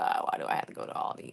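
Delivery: put-on loathing tone. Recounting how your child reacted to school visits, imitating his loathing. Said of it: "He would just kind of be loathing it".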